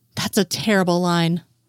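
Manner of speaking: usual speaking voice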